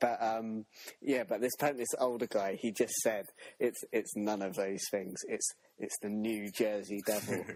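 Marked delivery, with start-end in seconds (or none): none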